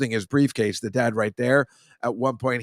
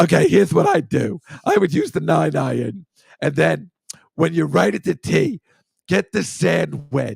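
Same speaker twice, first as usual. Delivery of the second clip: loud, slow, rough, creaky, drawn-out puppet voice; 4 semitones higher, 5 dB louder than usual. Showing how they voice their own puppet, in Bernie puppet voice. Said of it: "puppet like that that I call Bernie, and I just be like".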